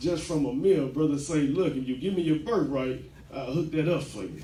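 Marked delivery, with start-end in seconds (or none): none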